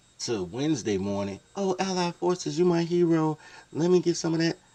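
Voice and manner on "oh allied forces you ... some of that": put-on very high, loud, welcoming girly voice. Acting out girls welcoming the Allied troops: imitating the girls. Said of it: "them girls went from Monday night like".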